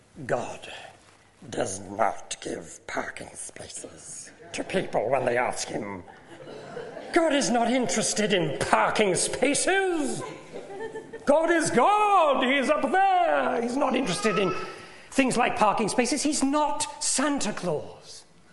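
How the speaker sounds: high, swooping creature voice. Retelling what theology professors told a woman, Gollum-like voice. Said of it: "they sound like Gollum".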